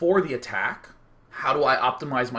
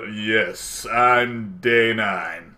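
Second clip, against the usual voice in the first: deep, low, very slow, dragged-out voice; 4 semitones lower, 3 dB louder than usual. Showing how it would sound to introduce himself: Brock Sampson voice. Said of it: "my Brock Sampson voice".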